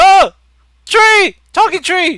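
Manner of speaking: very high, very loud, very slow drawn-out shriek. Voicing captives who wake and see a talking tree: screaming. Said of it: "some of them just kinda scream".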